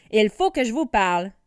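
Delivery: rough and gruff. Narrator reads the king's words to the dragon masters in a gruff voice. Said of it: "dit-il de sa voix bourrue".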